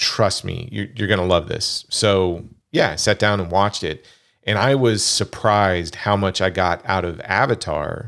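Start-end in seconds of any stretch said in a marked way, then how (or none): none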